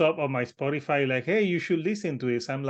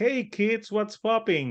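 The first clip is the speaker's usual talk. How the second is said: pitched-up voice straining to sound cool and hip; 6 semitones higher than usual. Mocking a band by imitating an old guy trying to act hip: imitating an old guy acting hip. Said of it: "that old guy that comes with, you know, all hip".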